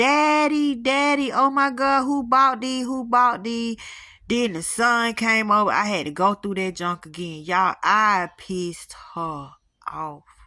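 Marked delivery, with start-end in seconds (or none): 0.0-3.8 sobbing, screaming outburst while breaking down. Retelling the daughter's reaction on seeing the orchid: imitating someone screaming and crying. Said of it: "she bust out screaming and crying and saying".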